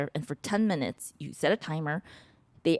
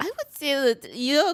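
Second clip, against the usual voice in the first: put-on Austrian accent, pitched way up; 10 semitones higher, 4 dB louder than usual. Playing psychoanalyst to a co-host, in a Sigmund Freud voice. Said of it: "I'm gonna stop doing the accent".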